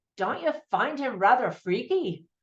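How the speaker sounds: unconvincing, so-so attempted Irish accent. Quoting the husband character when he first meets Tim, in an Irish accent. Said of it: "I don't know if that was a good Irish accent".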